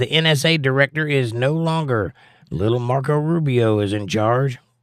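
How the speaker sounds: usual speaking voice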